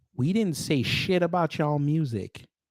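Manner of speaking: very slow, deliberate, word-by-word delivery. Addressing the Afrobeats fan base directly: very slow delivery. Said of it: "I'm really gonna say this as slow as I can".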